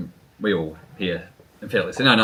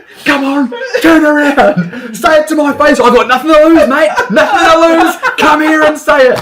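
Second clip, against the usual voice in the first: put-on furious, shrill, very loud yell; 13 dB louder than usual. Retelling Dad confronting a rude driver, imitating Dad's angry outburst. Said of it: "that's when you're allowed to get angry, eh, Dad?".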